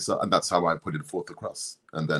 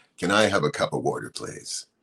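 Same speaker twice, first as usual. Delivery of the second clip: polite, put-on American accent. Speaker contrasts american and typical english accents, in an american accent. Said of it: "American accent can say like".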